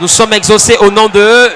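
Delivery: loud, high-pitched shouting.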